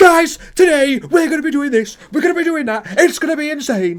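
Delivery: put-on over-excited kid hype, pumped up, loud and high. Mocking how child YouTubers talk to viewers: imitating a child YouTuber. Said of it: "like child YouTubers come across".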